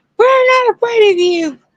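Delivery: put-on scream, very high-pitched. Retelling what was screamed at a creature on the trailer roof: retelling own scream. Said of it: "And I would scream".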